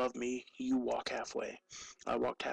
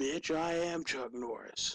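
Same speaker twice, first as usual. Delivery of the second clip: put-on bold, boastful call, loud and carrying; 3 semitones higher than usual. Retelling yelling out in the middle of the park: retelling own yell. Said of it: "I yell out".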